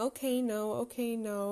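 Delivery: scared, fretful, anxious repeated delivery. Retelling a son upset by the vacuum cleaner: imitating Harry scared. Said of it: "the way he's saying".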